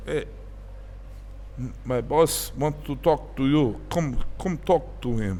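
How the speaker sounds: slow, fake, put-on Russian accent. Retelling what a Russian-speaking guy said to him: put-on Russian accent. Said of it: "That's my Russian accent".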